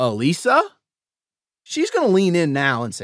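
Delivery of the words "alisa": Alisa said with rising pitch. Phone call example, asking for alisa: rising pitch on alisa. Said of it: "It's a question, and I raise my voice to a higher pitch as I say the name".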